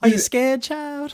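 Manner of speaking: very high, eerie, creepy preacher voice. Joking about the other speaker's creepy voice: preacher from Poltergeist Two voice. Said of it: "Sound like the preacher from Poltergeist Two".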